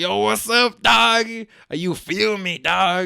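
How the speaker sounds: high, slow, stretched-out voice.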